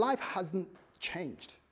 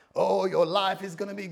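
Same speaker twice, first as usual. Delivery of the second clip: loud put-on American revival preacher delivery; 6 dB louder than usual. British speaker imitating a Houston church's style to the audience, American preacher accent. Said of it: "Talking like my American brothers".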